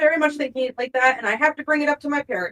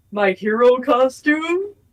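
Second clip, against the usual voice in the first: sarcastic, mocking delivery; 3 dB louder than usual. Asking whether a costume is needed: mocking tone. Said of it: "really mockingly with air quotes".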